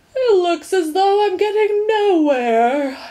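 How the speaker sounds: sleepy, drowsy yawn, pitched very high. Reading a story where a drowsy driver speaks: yawning while speaking. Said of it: "yawned Milo".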